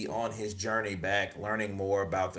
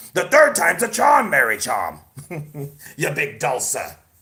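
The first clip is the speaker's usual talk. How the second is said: loud, swooping, belted-out, bad pirate voice; 7 semitones higher, 12 dB louder than usual. Talking about the build-up to the third fight, do a Tyson Fury impression like a pirate. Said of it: "Jedi Knight is bad. Sounds like a fucking pirate".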